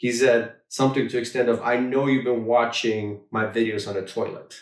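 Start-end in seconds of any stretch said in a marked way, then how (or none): none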